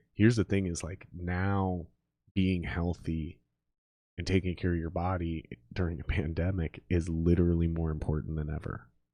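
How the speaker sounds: low, slow, dramatic delivery. Making a point sound dramatic in conversation, lowered, slowed voice. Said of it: "I'm slowing my speech because".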